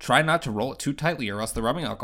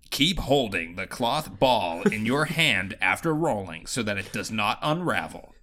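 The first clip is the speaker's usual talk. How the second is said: countdown video narration voice. Reading the last bullet point aloud to friends, in a YouTube voice. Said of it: "read this uh, last bullet point in YouTube voice".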